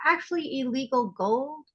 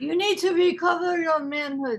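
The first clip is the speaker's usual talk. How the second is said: put-on Italian accent, mafia boss style; 4 semitones higher than usual. Acting out someone's reply in a comedy bit, Godfather impression. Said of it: "I was just trying to do a Godfather thing".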